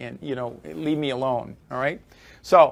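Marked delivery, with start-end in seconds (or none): none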